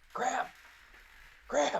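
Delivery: hushed whisper under the breath. Describing Tiffle at the manhole cover, speaker voices Tiffle whispering toward it. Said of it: "he kind of wh- whispers towards it".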